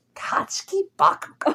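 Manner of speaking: whispered, breathy, hushed put-on voice. Imagining being interviewed by Nardwuar: Nardwuar impression. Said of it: "You do his voice so well".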